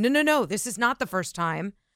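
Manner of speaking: plain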